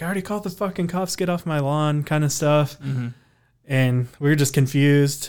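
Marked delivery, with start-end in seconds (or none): 0.0-2.0 put-on mild, pitched-up yelling. Retelling how a woman yelled at a man after the house was shot at: imitating someone yelling. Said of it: "she's yelling at him too".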